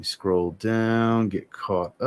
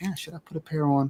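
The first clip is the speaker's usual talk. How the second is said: higher-pitched, tempted, musing tone. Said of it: "I'm like".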